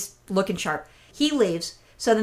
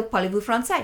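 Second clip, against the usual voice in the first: clumsy, awful, badly done non-native French accent. Speaker retelling asking Canadian tourists if they speak French, worst French accent. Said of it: "I obviously have like the worst French accent".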